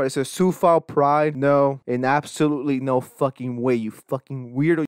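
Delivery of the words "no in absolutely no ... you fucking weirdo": plain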